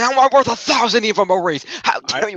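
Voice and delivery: acted, outraged, high, furious screaming tirade. Retelling a quoted angry outburst: imitating someone screaming angrily. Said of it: "and starts screaming in Foley's face".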